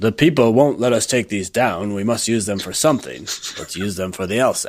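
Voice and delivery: put-on British administrator accent. Playing a frustrated administrator joking about castles: put-on British accent. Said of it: "That's your British accent?".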